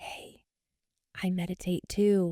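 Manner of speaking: hushed, very slow, drawn-out whisper. Retelling someone who comes up after a conference talk: imitating someone whispering. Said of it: "Why are you whispering?".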